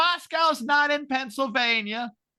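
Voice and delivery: high, drawn-out shout. Retelling how a woman he shouted to screamed her answer back: retelling a scream. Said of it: "So she screams back".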